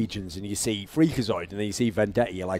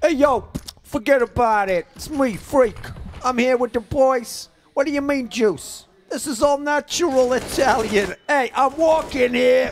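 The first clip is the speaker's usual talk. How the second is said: put-on New Jersey accent, very high-pitched; 14 semitones higher, 4 dB louder than usual. Talking about Ryan with friends, imitating Ryan in a New Jersey accent. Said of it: "that like New Jersey accent".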